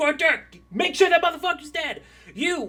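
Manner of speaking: shouting. Voicing a calm woman in a wheelchair directing fighters: yelling orders. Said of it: "just yelling orders at these people".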